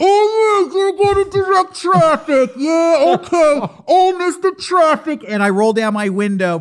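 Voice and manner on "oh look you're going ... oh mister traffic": mock, high, taunting yell. Retelling a traffic dispute, the speaker quotes the other driver: imitating a driver shouting. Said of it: "I can hear him shouting at me".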